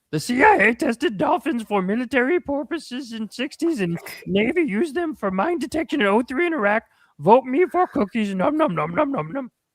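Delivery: high, cartoonish puppet-monster character voice. Reading a viewer's message aloud, in a Cookie Monster voice. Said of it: "Cookie Monster".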